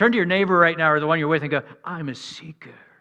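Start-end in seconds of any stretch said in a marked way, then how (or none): 1.8-2.7 hushed, very soft, posh, putting on airs. Showing how to say it to your neighbor, in a posh kind of way. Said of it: "say it, like, in a posh kind of way".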